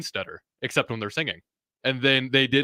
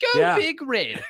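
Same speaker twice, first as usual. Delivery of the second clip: fake English accent, pitched higher. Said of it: "You sound a little bit more, uh, British now".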